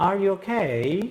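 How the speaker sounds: pitch rising at the end of okay. Explaining moving the voice to a higher tone: rising pitch on okay. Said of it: "Y subo, ¿no?".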